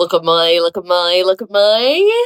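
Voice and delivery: put-on Australian accent with stretched vowel on my. Doing a bit for the co-host: Australian accent. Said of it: "Your Australian accent is literal perfection".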